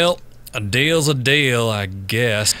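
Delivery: gravelly, rough, grumbly character voice. Retaking a character line with more gravel added: gravelly Raul voice. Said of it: "I don't think I added enough gravel into the performance".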